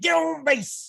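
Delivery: rough, barked, coach-style delivery. Imagining him as a coach hauling everybody: Macho Man voice. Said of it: "he'd be hauling everybody".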